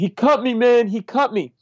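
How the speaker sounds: acted, very high, piercing scream. Retelling a fight at a bar just before going on stage; retelling a scream. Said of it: "starts screaming".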